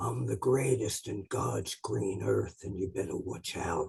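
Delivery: low, very quiet, soft-spoken menace. Act out Harley, a tough man, speaking on TV, in a quiet, intimidating Harley impression. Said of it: "he'd be so quiet and go".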